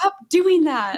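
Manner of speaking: mock annoyed, fed-up tone. Recounting telling someone to stop what he was doing, retelling being pissed off. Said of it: "And I'm like all pissed off".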